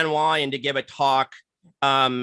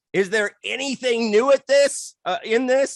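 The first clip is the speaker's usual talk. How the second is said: very high, sarcastic, faintly angry tone; 9 semitones higher than usual. Recalling what he turned and asked during a conference talk, mock-sarcastic, a little angry. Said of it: "very sarcastic and a little bit angry".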